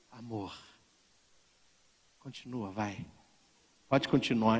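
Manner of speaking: sultry, seductive, coaxing come-hither voice. Retelling a story of a wife asking her husband to continue: imitating her seductive voice. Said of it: "Aí ela com aquela voz".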